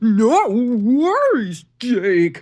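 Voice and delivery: slow, loud, drawn-out electronic clown voice. Narrating a phone call where a voice answers Jake: slow electronic clown voice. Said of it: "the slow electronic clown voice replied".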